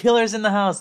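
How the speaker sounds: high, loud, panicked, alarmed blurt.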